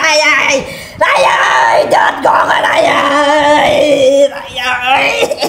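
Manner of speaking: crying out in pain.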